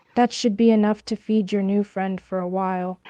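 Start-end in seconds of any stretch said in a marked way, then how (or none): none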